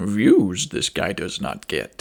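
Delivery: deep slow monster voice. Talking to viewers about a movie, in a Yoda impression. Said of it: "you guys like my Yoda impression?".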